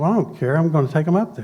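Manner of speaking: ordinary talk, nothing marked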